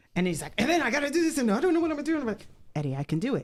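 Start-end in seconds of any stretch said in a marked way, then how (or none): 0.5-2.2 distraught, helpless, pitched-up fretting. Retelling a man on his sofa who just got the news: imitating a distraught man. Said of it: "he was distraught".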